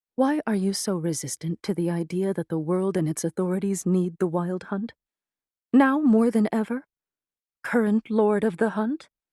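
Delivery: composed, persuasive, calm and even. Narrating a character's reply to another woman, in a calm voice. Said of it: "Funny thing for one she-wolf to say to another. / The invisible servant's text box popped up between the two women. / Hmm, about twenty-two centuries." / The spirit of [name], a former teammate who’d".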